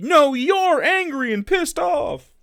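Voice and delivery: mock, very high, stretched-out screaming. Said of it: "You're screaming".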